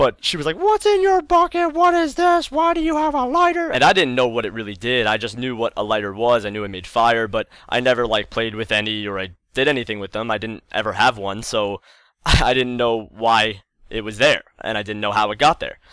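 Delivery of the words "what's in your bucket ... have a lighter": put-on yelling, very high pitched, screaming. Retelling how mom screamed upstairs about a lighter in the bucket: imitating mom screaming. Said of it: "That was my best mother impression".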